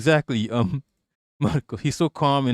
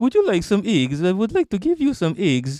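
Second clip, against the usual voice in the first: high, put-on Russian grandmother accent and voice; 6 semitones higher than usual. Showing what a russian babushka sounds like, in a russian babushka accent. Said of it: "This is what Russian sounds like".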